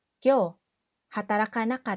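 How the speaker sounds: ordinary talk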